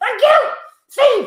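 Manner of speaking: very high, loud shout. Blindfolded, thanking Steve once he's right in front of you, shouting. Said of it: "don't need to shout just because you're blindfolded".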